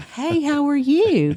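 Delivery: put-on high, slow baby-talk voice. Retelling how a researcher talked to a baby: imitating motherese. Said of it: "like a mother talks to her baby".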